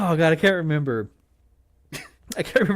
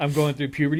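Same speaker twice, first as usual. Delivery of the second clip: ordinary talk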